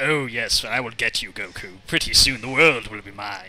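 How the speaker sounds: low, cold, devious, menacing theatrical stage-villain voice. Recalling how a villain always spoke to Goku, in a put-on Shakespearean villain voice. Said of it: "it was like a Shakespearean villain".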